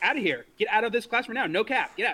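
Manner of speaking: stern teacher voice. Retelling yelling at a kid in class: retelling own yelling at a kid. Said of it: "'Cause I was yelling at a kid".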